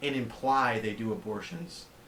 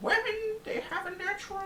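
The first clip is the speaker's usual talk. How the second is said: very high-pitched put-on voice. Trying out a Jordan Peterson impression: high-pitched Jordan Peterson impression. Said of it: "Jordan Peterson".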